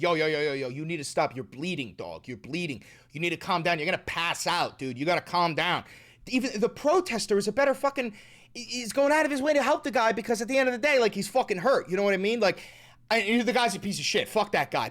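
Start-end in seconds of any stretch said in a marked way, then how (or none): 0.0-5.8 calming, urging, talking-down tone. Retelling how a protester tried to stop a bleeding man: imitating the protester. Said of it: "The protester is trying to stop him and be like".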